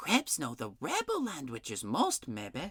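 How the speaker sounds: conspiratorial whisper. Reading a story where a character shares a secret: conspiratorial whisper. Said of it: "lowered her voice to a conspiratorial whisper".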